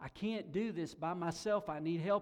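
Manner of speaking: imitated screaming. Retelling a rescue, quoting a woman after surfacing: imitating someone screaming for help. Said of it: "she began screaming for help".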